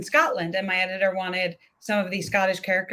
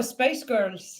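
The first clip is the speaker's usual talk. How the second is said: Scottish accent attempt drifting into an Irish sound; 3 semitones higher than usual. Trying a trick phrase for a Scottish accent: Scottish attempt that comes out Irish. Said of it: "I'm doing Irish again".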